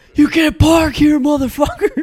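very high, very loud, shrill, enraged screaming. Retelling a trucker who marched over wanting to fight the speaker's dad, retelling a trucker's scream. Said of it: "and he's screaming".

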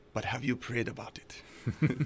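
put-on soft, hushed Nigerian accent, near whisper. Retelling a man asking him for the third time, in his Nigerian accent. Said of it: "with his Nigerian accent".

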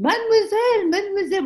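put-on very high voice with heavy French accent. Recounting a heavyset man running over to her, thick french accent. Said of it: "with a heavy, thick French accent speaking English".

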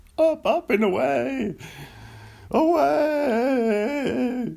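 very high, slow cry, "away" stretched out. Joking around with listeners, doing a Seinfeld impression. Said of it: "this is my Seinfeld doing a Buzz Lightyear".

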